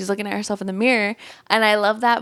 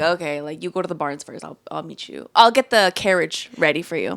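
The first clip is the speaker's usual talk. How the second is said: put-on hesitant, unwilling, reluctant, grudging tone; 4 semitones lower than usual. Retelling Carlos offering to help them escape: imitating Carlos reluctantly. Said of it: "he says it in a very, like, reluctant way".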